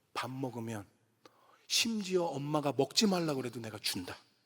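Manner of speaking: low, hushed, secretive whisper. Father retelling what he whispers to his children after meals: whispering. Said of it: "제가 귓속말로 그래요".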